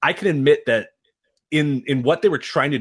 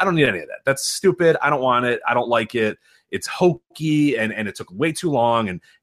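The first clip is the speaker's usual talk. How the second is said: ordinary talk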